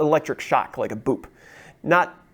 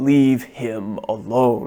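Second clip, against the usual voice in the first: put-on creature voice, slower. Recounting a voice heard while lying on their side, Cave of Wonders voice. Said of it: "in this kind of quality of voice of timbre".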